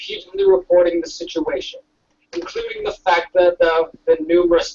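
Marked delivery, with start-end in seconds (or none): none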